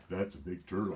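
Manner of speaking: put-on woman's voice, very masculine and mannish. Previewing a line the next episode will hear: imitating Belinda's most masculine voice. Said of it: "in her most masculine female voice".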